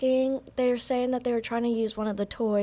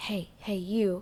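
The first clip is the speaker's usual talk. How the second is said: hushed, low stage whisper; 3 semitones lower, 5 dB quieter than usual. Speaker recounts a man calling them over to the front: retelling a low half-whisper. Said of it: "whispering real low".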